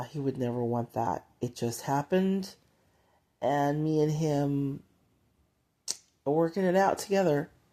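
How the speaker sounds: voice going tearful and welling up. Someone speaks of working out their suffering together with the Heavenly Father, getting teary. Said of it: "I'm getting teary as I say that".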